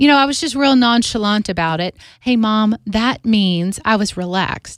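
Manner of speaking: ordinary talk, nothing marked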